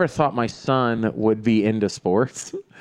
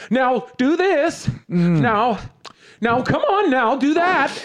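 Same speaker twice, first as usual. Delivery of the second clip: very high, shrill, annoying, nagging yell; 12 semitones higher than usual. Speaker acts out a mom yelling at the kids, annoying mom voice. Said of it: "she's yelling them in like an annoying mom voice".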